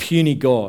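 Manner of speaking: usual speaking voice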